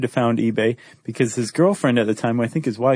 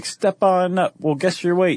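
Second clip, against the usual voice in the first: high-pitched carnival sideshow barker call; 6 semitones higher than usual. Explaining what a carnival barker does, then doing a carnival barker voice. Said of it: "the barker's the one who's like".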